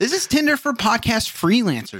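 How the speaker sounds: mock cheesy announcer voice, high, swinging pitch.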